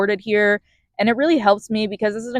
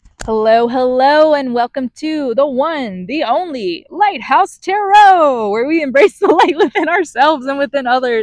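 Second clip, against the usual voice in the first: pitched-up, announcer-style radio voice; 5 semitones higher, 4 dB louder than usual. Tarot host welcoming viewers at the start, in a radio announcer voice. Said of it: "I don't know why I just did that voice".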